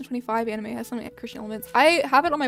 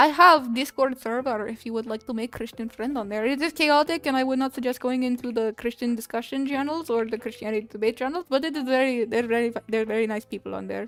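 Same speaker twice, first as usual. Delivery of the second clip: put-on Russian accent. Talking to viewers, in a Russian accent. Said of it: "No more Russian accent".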